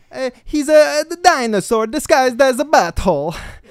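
put-on very high-pitched, loud Italian accent. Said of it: "I'm doing [name], who's doing an Italian".

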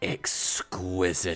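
soft, hushed whisper with sinister relish. Retelling a favorite line read from the movie: soft, sinister Loggia voice. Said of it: "he just says very softly, very sinister".

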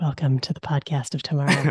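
hushed whisper. A podcast host shows how the welcome might have gone, whispering. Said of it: "I wonder if I should just like whisper this".

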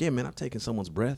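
soft, hushed stage whisper. Retelling what a cousin out of prison said: imitating someone half-whispering. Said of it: "Why he whispering?".

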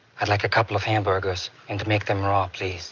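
very low, deep character voice. Explaining what a cartoon voice is based on: Peter Lorre voice. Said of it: "a little bit of Peter Lorre".

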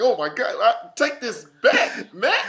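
flustered, building panic with pitch rising throughout. Acting out a scene where a friend juggles a gun: imitating Sylvester panicking. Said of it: "think about how panicked you are".

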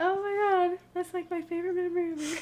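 high-pitched, tearful crying speech. Taking turns sharing three favorite memories, speaking while crying. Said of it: "And I am crying".

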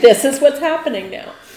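firm, no-nonsense mother voice. Imagining talking to a cop in a mom voice: stern mom voice. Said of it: "It's a stern no".

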